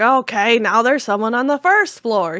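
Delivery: mock annoyed, irritated crotchety old man voice. Retelling what a game's old man says when the bell rings: imitating an irritated crotchety old man. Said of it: "He's all irritated".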